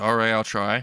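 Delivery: ordinary delivery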